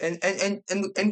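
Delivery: stutter repeating and. Mid-story, getting stuck on a word, stuttering. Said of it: "I'm stuttering".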